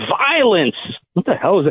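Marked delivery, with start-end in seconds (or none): 0.0-0.8 high, toned-down, put-on raving man's scream. Retelling what a shirtless man on the train screamed: imitating a man screaming. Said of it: "then he was screaming".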